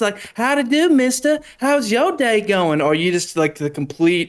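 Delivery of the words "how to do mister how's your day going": sweet-talking Southern belle accent, pitched up. Describing Southern types, imitating a real Southern belle: soft Southern belle voice. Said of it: "the real Southern Belle talking soft like this".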